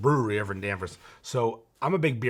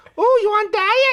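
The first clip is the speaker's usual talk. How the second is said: put-on yelling voice, higher and louder; 12 dB louder than usual. Acting out ordering food from a server who yells: imitating Roxy's voice. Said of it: "She got this voice".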